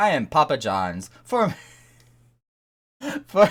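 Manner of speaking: slow, giggling, breaking up laughing through the words. Reading a character's lines aloud, laughing while talking. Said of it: "I can't do it without laughing".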